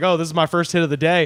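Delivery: ordinary talk, nothing marked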